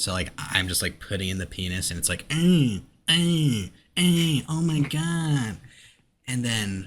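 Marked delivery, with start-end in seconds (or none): 2.3-5.6 long, high moans. Retelling a game playing late at night: imitating loud moaning game audio. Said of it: "super loud".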